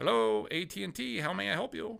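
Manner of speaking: put-on Indian accent. Imitating a phone agent answering an at&t call: attempted indian accent. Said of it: "I can't do an Indian voice".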